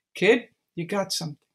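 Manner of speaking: normal talking voice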